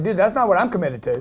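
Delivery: ordinary delivery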